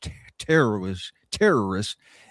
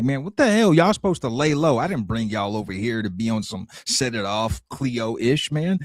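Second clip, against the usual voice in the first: normal talking voice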